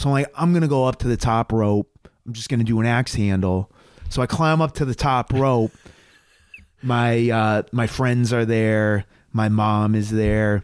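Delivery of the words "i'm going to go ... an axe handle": plain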